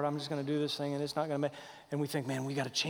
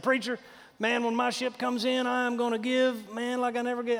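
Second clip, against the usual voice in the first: high-pitched put-on Texas accent; 9 semitones higher, 5 dB louder than usual. A preacher quoting people who come up to him, in texas accent. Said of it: "they talk in that kind of an accent".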